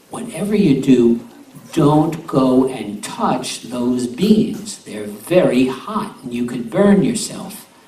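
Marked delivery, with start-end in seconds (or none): none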